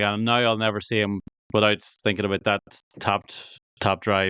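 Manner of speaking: plain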